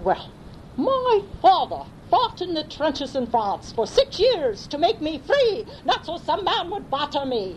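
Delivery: put-on beautiful, very high, swooping English accent. Retelling Rosemary's reply to a man who spoke of World War II, imitating her beautiful English accent. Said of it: "with a beautiful English accent".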